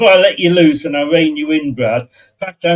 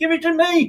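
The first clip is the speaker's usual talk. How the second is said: pleading, pitched-up cartoon puppet frog voice; 12 semitones higher, 5 dB quieter than usual. Retelling how an unmarked striker called for the ball: Kermit impression. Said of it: "doing his best Kermit impression".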